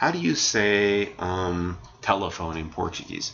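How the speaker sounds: ordinary talk, nothing marked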